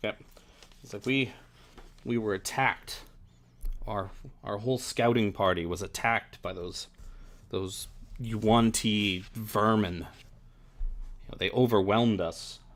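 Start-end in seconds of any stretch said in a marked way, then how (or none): none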